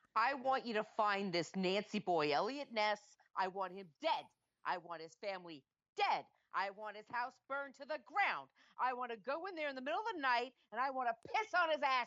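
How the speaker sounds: put-on mob-boss voice, raging and furious. Podcast co-host doing an impression for the host; mock-angry impression. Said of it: "you're so angry".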